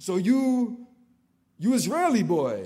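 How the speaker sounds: terrible put-on Croatian accent, very high and loud. Retelling a man's question to him at the table, in a terrible Croatian accent. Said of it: "excuse my terrible Croatian accent".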